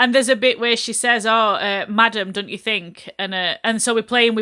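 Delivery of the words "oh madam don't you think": normal talking voice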